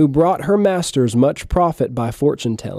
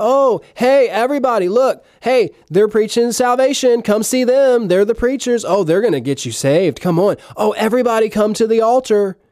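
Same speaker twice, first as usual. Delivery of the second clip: put-on, high, sarcastic, mocking, jeering tone; 8 semitones higher than usual. Acting out the possessed girl's taunts in a sermon: imitating a mocking heckler. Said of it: "This is a spirit of mockery".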